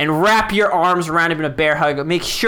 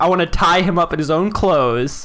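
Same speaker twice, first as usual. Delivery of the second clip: ordinary talk, nothing marked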